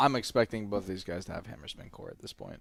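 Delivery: thoroughly let down and disappointed, swooping delivery. Giving a prediction to another speaker, disappointed. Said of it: "You sound so disappointed".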